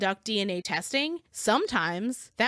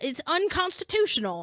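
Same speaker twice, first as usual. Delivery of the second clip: petulant, pitched-up, indignant lawyerly tone; 6 semitones higher than usual. Imitating an attorney who calls every ruling unconstitutional: imitating Mark's voice. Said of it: "I like your means voice".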